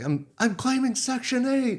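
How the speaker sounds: very high, rising, sobbing, crying shout. Recalling an older guy at boot camp, retelling a crying yell. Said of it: "And he's yelling it".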